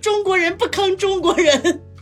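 acted-out yelling. Retelling what a man yelled while taking his turn spinning, retelling a shout. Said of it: "一边大喊说".

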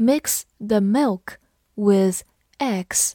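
very slow, whispered read-along.

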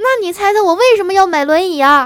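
high, loud, furious shout.

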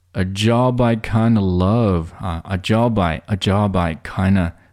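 very slow, half-speed, linked, connected reading.

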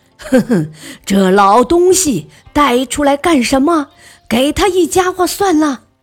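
loud scornful shouting, pitch climbing. A chief plotter sees Emperor Yang brought out and starts loudly cursing. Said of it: "便大声地骂开了".

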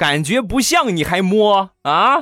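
angry, high, slow retort. Retelling what a wife said after a slap: imitating a very angry wife. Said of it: "我媳妇儿特别生气地说".

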